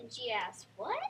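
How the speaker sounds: voice lifted on "what". A student shows the class how to read a question with expression: raised voice. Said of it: "raise your voice and be like".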